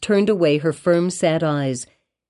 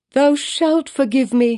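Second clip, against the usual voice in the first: high exclaimed outcry; 8 semitones higher than usual. A woman flings herself down beside the man who won't forgive her, crying out. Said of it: "cried Hester".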